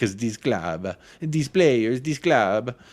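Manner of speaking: put-on Italian-accented English delivery. Speaking in character about the club and its players, put-on Italian accent. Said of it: "that's enough of my Italian accent".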